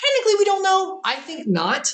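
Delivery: high voice with a big crack. Speaker answering a question about aliens, with a big voice crack. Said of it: "that was a very big voice crack".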